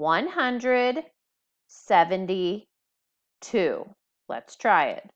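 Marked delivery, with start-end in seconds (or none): 0.0-3.9 very slow, careful, each part said clearly. Teaching a second-grade math strategy, saying the number: said nice and slowly. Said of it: "say the number nice and slowly".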